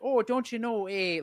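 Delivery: loud Minnesota accent, laid on high. An actor demonstrates the voice one of her sixties-set plays needs, Fargo accent.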